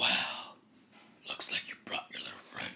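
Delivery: creaky, whispered, sneering creature voice.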